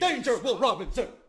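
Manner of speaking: sci-fi robot voice. Comparing someone's promo to a robot, doing the Lost in Space robot voice. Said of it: "the robot from Lost in Space".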